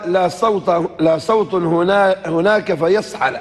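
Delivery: normal talking voice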